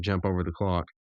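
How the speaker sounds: ordinary talk, nothing marked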